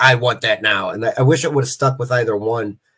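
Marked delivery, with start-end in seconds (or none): 0.0-0.9 militant, no-nonsense, straight-up military delivery. Describing a character voice that changed between episodes, in a militant voice. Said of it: "a straight up militant voice".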